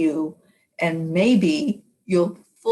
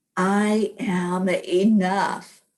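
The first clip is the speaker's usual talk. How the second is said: strong, firm, fully meant, said out loud. Showing listeners how to say the affirmation: said out loud and strong. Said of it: "Say it out loud. Say it strong".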